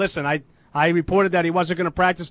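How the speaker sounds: ordinary talk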